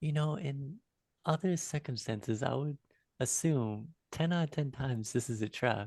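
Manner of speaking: quiet, hushed, half-whispered tone. A player speaking as Kessler to another character, in Kessler's hushed half-whisper. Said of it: "in a hushed tone, whisper over".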